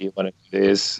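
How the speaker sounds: ordinary delivery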